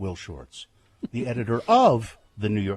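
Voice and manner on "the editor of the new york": the word of stressed hard and heavily. Mimicking how she introduces the New York Times puzzle editor: strong stress on of. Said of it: "Why are you emphasizing the word of?".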